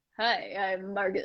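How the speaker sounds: low, soft, confident swaggering actor voice. Imitating the listener's actor voice back at them, imitating your actor voice. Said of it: "You do this actor voice".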